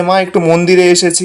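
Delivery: plain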